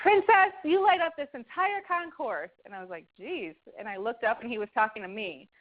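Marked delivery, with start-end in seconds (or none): 0.0-2.5 very high, carrying, booming holler. Retelling a man's call across the airport concourse, retelling a booming voice. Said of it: "I hear this booming voice".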